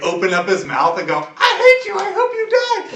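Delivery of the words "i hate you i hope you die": put-on shrill, loud, very high, drawn-out child's voice. Narrating a game scene, the speaker voices a character shouting in a loud child's voice. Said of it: "in a child's voice".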